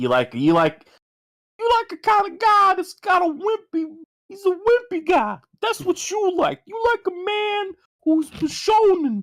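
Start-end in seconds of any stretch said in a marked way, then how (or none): 1.6-9.2 very high, silly, swooping put-on cartoon character voice. Teasing someone about liking slender bishonen men, speaker uses a put-on silly character voice. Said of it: "That voice sounded like something Empty Hero would do".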